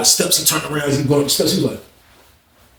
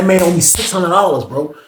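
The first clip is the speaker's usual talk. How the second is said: ordinary talk, nothing marked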